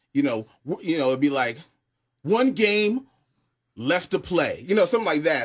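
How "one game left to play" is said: slow, pitched-up promo voiceover ramping up intensity. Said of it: "as the music ramps up".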